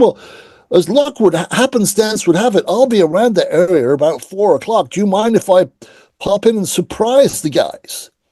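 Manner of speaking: bad, horrible fake American accent. Retelling a phone call to the people taking a message, in a horrible American accent. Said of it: "Horrible American accent".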